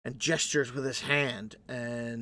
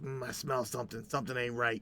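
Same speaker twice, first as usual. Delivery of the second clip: suspicious creature voice, quieter; 5 dB quieter than usual. Voicing a creature that flies around sniffing the area: voicing Sparkles sniffing suspiciously. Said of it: "He goes".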